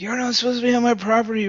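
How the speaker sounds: shrieking, high-pitched screaming yell. Speaker retells a man chasing them into the street, imitating a man screaming. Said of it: "and he was screaming".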